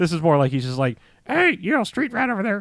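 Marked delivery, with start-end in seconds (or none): 1.3-2.6 very high, bird-like parrot voice. Describing how the parrot talks in this version, parrot voice. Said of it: "still in parrot voice".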